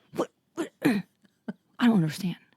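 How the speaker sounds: low-key, slow, stumbling words, as if to oneself. Retelling his reaction to the blender, imitating someone speaking quietly. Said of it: "in his, like, quiet".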